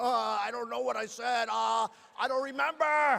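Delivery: slow, derisive, mocking reporter voice. Imitating a reporter who can't recall what he said: mocking imitation of a reporter.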